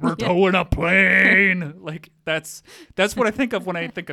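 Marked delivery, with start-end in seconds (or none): 0.0-1.7 put-on tough truck-ad voice, louder. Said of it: "the guy's voice".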